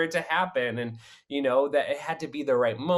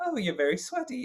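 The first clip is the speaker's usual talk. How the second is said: put-on British accent, higher pitch; 10 semitones higher, 3 dB quieter than usual. Retelling what a castmate said backstage: imitating Gina Beck's British accent. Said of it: "she was British".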